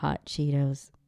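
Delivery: deep announcer voice, ASMR delivery.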